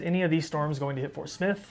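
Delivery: ordinary delivery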